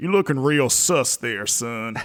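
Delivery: put-on cartoon rooster drawl. Joking along about a game character, Foghorn Leghorn drawl. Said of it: "That Foghorn Leghorn, like, drawl".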